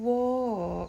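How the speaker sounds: pitch falls downward across the word walk. Giving the voice cue from trot to walk: falling pitch on walk. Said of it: "a downward lilt in my voice".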